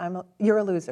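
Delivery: plain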